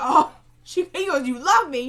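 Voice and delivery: loud, high, scoffing disbelief.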